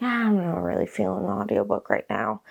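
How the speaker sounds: ordinary talk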